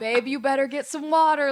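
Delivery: sweet, kindly, friendly holler. Recounting yelling down to her husband, she quotes his reply: imitating a sweet holler. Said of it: "Like hollers it like just so nice".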